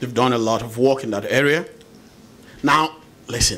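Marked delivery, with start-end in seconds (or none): 2.6-3.6 teacherly schoolteacher tone. Guest explaining an NGO's work to the host, talking like a teacher. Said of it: "I'm talking like a teacher".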